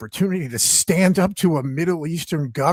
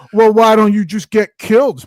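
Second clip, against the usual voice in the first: sarcastic parody voice, higher and louder; 6 semitones higher, 10 dB louder than usual. Mocking disingenuous people on Twitter: mocking imitation of Twitter users.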